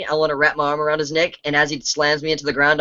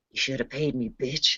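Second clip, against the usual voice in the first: barely-there, very light, soft whisper; 8 dB quieter than usual. A player's character whispers into a man's ear, a very light whisper. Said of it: "I'll whisper very, very lightly in his ear".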